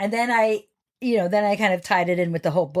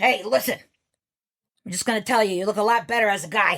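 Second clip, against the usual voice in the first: rough, imitated put-on voice. Retelling how an art teacher named DeCosmo talked: imitating teacher's rough voice. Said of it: "she talked like this".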